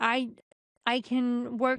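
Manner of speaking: normal talking voice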